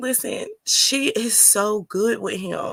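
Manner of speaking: fighting back tears. Praising a mother who is good with her baby, holding back tears. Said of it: "let me calm down 'cause I'm about to".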